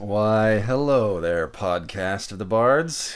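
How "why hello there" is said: sultry, smooth, sexy caramel voice. Asked to say hi to the podcast in a sexy caramel voice. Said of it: "say hi in that sexy caramel voice".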